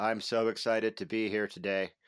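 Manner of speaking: flat, level monotone, all in one tone. Podcast co-host greeting listeners, in a flat Neil Breen monotone. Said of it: "I'm going to do the whole episode in this monotone thing".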